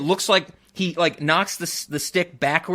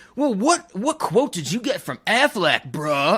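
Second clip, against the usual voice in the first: put-on swooping surfer-dude voice; 3 semitones higher than usual. Quoting what another man said to him, in a surfer dude voice. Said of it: "doing like the surfer dude voice".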